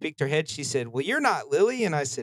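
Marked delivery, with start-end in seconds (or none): 0.9-1.8 put-on heavy, thick rural country accent, pitched up. Speaker retells what a lady pushing a cart said to them, thick country accent. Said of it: "in the most country accent".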